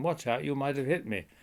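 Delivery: loud called-out shout, high pitch. Retelling shouting a warning up at a man with a rifle: retelling a shout. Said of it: "I shouted at him".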